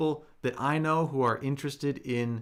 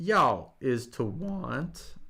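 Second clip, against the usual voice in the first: voice cracking. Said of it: "Excuse my voice crack there".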